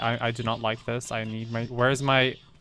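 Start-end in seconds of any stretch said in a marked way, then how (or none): none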